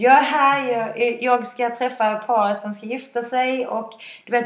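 high, loud speech through helpless laughter. Retelling arriving to meet a couple getting married, acting out a laughing fit. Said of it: "Alltså jag kan inte sluta skratta".

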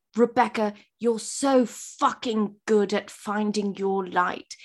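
put-on whispered voice. Retelling words whispered in the ear during tech: imitating Robert whispering. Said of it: "he whispers in my ear".

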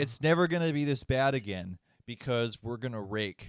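normal talking voice

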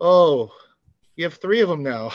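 mock amused, chuckling, laughing through the words. Recounting a game moment and quoting another player, imitating someone laughing while talking. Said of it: "he was laughing too".

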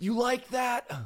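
very high, screaming, taunting shout. Act out the player walking into the locker room after a game, imitating Kirk Cousins screaming. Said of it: "he's screaming".

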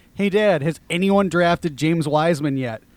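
plain

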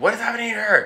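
mock, very high, frantic, panicked cry. Retelling a movie scene, a father freaking out: imitating a panicked father. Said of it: "Her father's freaking out. He's like".

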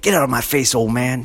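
son's voice, defiant, talking back. Retelling a jab at his sons, imitating Tristan's voice. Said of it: "I pretend I'm Tristan's voice".

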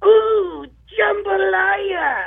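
very high, excitable play-by-play announcer cry. Retelling a broadcast call, doing a Bill Raftery impression. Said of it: "with a Bill Raftery impression".

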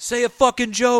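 very loud, shrill, booming heckling yell. Retelling how everyone booed her and shouted at her, retelling a crowd's yell. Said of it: "yelling at her".

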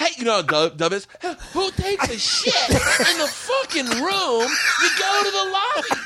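very high, swooping, indignant, livid rant. Retelling a hotel room incident, imitating livid Sebastian. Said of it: "I'm doing Sebastian right now".

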